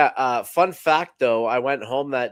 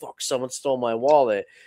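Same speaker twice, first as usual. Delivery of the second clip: put-on, frantic, panicked freak-out. Retelling losing a wallet in a change room: imitating own panicked freak-out. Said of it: "so I'm, like, freaking out".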